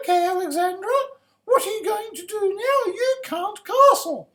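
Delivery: very high put-on woman's voice. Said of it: "I'll try to put on my women's voice here".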